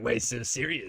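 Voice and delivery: low, dropped-pitch comic villain voice. Voicing a fan-art figure compared to the Joker: Joker voice. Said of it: "he's like the Joker".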